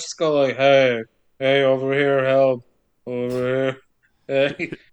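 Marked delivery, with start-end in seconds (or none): 0.6-3.8 slow, half-hearted mumble, barely raised. Retelling a movie scene, imitating Jamie Lee mumbling instead of calling out. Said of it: "Jamie Lee mumbles instead of calling out".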